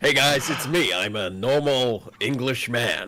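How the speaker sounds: put-on American accent. Introducing himself to the stream: Benedict Cumberbatch American accent. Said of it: "with the American accent".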